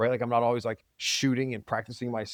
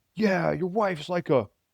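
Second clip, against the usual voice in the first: mock yelling, higher; 6 semitones higher than usual. Retelling what the neighbor yelled across the property line: imitating a neighbor yelling. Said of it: "yelling about my wife to me".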